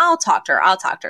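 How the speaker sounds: ordinary talk, nothing marked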